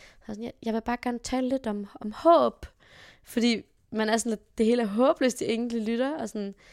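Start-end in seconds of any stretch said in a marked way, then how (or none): 0.6-2.6 charming, light, cute Norwegian lilt. Retelling a woman's speech at the microphone, in a cute Norwegian accent. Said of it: "hun har sådan ret cute norsk accent".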